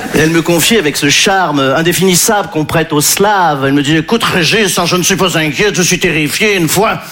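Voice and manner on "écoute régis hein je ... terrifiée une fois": put-on Belgian accent. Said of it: "je prends l'accent belge".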